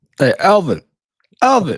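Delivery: terrible fake Brooklyn accent. During the show's opening, a host calls out to elvin: terrible brooklyn accent. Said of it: "worst Bro- Brooklyn accent ever".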